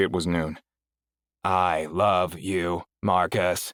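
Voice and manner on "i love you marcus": very slow, mechanical robot voice. Narrator reads Jordan's line to Marcus, in a robotic voice. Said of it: "Jordan said in a robotic voice".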